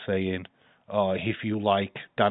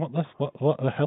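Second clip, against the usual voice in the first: put-on confused voice, higher pitched; 7 semitones higher than usual. Retelling the streamer's puzzled reaction: imitating Dave, confused.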